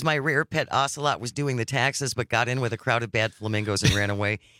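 ordinary talk

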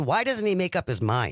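usual speaking voice

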